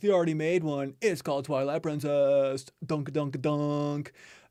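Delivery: slow, smug, smart-alecky know-it-all tone. Retelling comments from smart alecs: imitating smart-aleck commenters. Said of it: "a couple of smart Alecs were like".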